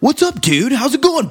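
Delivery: American-accented voice.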